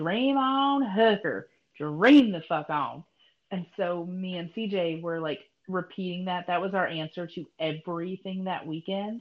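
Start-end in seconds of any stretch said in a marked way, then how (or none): 0.0-3.0 put-on strong, heavy, loud country accent. Retelling a joke's punchline the way a man delivered it: very country accent. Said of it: "he says it like this very country".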